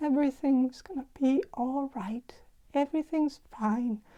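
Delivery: very soft, soothing, gentle hushed voice. Voicing an older woman sensed in a reading: imitating a very soft, gentle voice. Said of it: "very soft and gentle voice".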